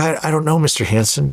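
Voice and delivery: mock stuttering, high-pitched and nervous. Retelling what a nervous caddy answered: imitating a nervous stuttering caddy. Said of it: "He was stuttering and he was shaking".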